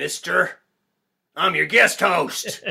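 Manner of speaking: menacing, intimidating, gruff, rough, very loud delivery. A podcast guest introduces himself as guest host, in an intimidating, rough tone. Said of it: "in that intimidating, rough tone".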